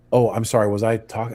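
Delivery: put-on hushed mock whisper. Speaker retells answering someone who asked him to be quieter, retelling a whisper. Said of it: "I'm like whispering".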